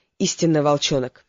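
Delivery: plain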